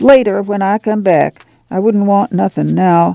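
ordinary delivery

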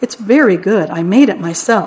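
ordinary delivery, nothing marked

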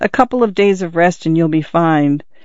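ordinary delivery

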